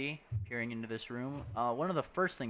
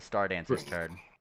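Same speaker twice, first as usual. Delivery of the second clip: ordinary talk, nothing marked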